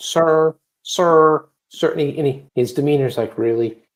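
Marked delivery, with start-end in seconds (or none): 0.0-1.9 high, evasive voice, repeated "sir". Describing a man caught lying through his teeth, imitating his 'sir, sir' voice. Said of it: "when he goes into that sir, sir voice".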